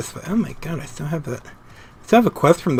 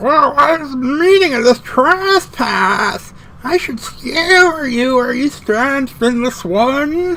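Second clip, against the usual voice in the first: put-on high, slow, loud old-man creature voice; 11 semitones higher, 6 dB louder than usual. Voicing a Sahagin Spawnling answering the speaker, Ixel and old man voice blend. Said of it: "that sounds like a cross between my Ixel voice and my old man voice".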